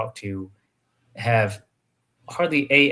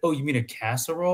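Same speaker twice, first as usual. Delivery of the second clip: plain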